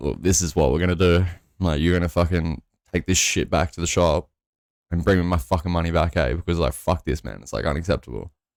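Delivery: ordinary delivery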